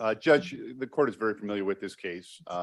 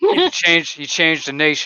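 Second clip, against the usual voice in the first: mock bluffing kid voice, higher and louder; 7 semitones higher, 12 dB louder than usual. Imitating a kid bluffing through a book presentation: imitating a kid bluffing a book report. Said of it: "He was like".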